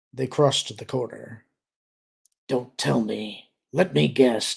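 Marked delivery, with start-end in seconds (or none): 2.5-4.6 low, private muttered aside. Reading a scene where a character guesses privately: muttering in a low voice. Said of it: "Dizra muttered, keeping his voice low".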